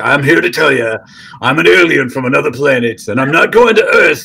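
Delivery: put-on cranky, grumpy old man alien voice. Speaker shows how aliens sound in their head: grumpy old man alien voice. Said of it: "It's like a grumpy old man".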